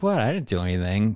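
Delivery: ordinary delivery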